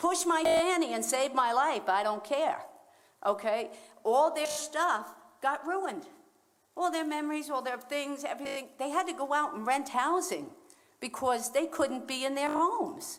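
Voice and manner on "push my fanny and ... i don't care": put-on loud, hollering elderly woman's voice. Retelling how an eighty-two-year-old woman being rescued from flooding yelled: imitating an old woman yelling. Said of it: "She's just yelling".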